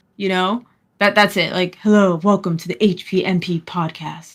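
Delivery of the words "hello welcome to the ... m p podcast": slow, strained, forced deep voice. Speaker imitating how a woman sounds, forcing a deep voice. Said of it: "a woman who's just trying to have a deep voice".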